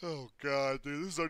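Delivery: talking through a yawn. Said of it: "I'm yawning".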